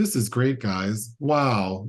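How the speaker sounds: mock deadpan, dead-level flat monotone. Discussing a film, mimicking how an actress in it talks: imitating a flat delivery. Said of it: "she's so flat sometimes".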